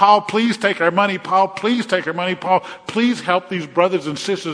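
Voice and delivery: high, loud, insistent put-on begging, over and over. Acting out the brothers and sisters begging paul, retelling pleading. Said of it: "but they were begging us".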